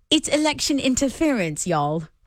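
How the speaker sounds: bad put-on British accent. Asked to say the line again with a British accent, bad put-on British accent. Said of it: "now do it with a British accent".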